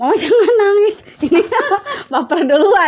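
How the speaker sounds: high, loud, laughing teasing tone.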